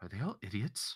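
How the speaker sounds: very hushed whisper, barely voiced. Leaning over to whisper into another character's ear, whispering. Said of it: "I whisper into his ear".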